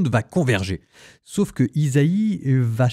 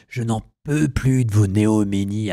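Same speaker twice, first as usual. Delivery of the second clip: acted biting sarcasm, anger close behind; 4 semitones lower than usual. Quoting an exasperated God from the first chapter: imitating a sarcastic tone. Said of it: "avec un ton sarcastique".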